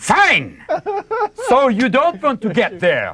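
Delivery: put-on German navigation-voice accent, very high, swooping. Imitating a German car GPS after a missed turn: put-on German accent. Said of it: "the German ones that they have in the cars".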